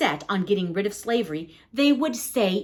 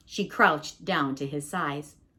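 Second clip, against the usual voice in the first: ordinary delivery, nothing marked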